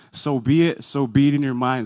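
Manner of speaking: ordinary talk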